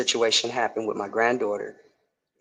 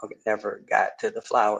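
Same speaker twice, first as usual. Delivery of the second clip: ordinary talk, nothing marked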